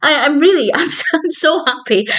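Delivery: overcome, stumbling voice. Telling listeners how they finally got into The Office, getting emotional. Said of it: "I'm getting emotional".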